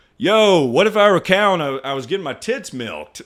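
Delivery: ordinary talk, nothing marked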